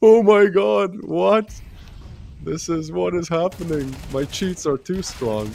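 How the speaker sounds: stunned, disbelieving, drawn-out shocked outburst. Retelling a gambling clip's reaction, imitating a streamer's shocked reaction. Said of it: "And he was like".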